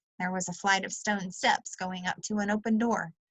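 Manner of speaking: ordinary delivery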